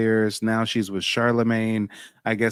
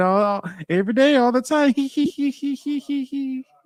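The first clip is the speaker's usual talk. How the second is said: very slow, high, drawn-out nervous chuckle. Mimic a woman saying things she knows she has no business saying, imitating her nervous chuckle. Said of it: "she does that nervous chuckle like".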